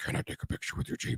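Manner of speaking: very quiet, breathy, breathed-out whisper. Retelling what Batman asked about the speaker's Jeep: Batman voice. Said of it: "Full Bat voice and everything".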